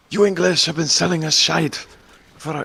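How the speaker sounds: put-on Irish accent. Imitating the French resisting English ideas: put-on Irish accent. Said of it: "I'm doing an Irish accent for French".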